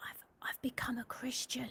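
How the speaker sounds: whispered, hushed, close, soft and halting. Retelling what Michelle whispered while helping at the door: imitating Michelle's whisper. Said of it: "she just whispered to me".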